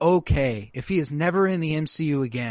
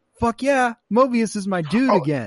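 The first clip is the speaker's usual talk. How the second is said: put-on giddy childlike excitement, pitched up; 7 semitones higher than usual. Retelling a scene where Loki finds a friend: imitating excited childlike Loki. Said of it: "Loki's so excited. He's childlike".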